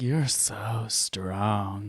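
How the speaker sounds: low, deep, soft, sultry murmur. Retelling what a strength workout machine said during calibration, imitating a deep sultry voice. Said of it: "Its voice got really deep and sultry like that".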